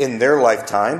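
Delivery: plain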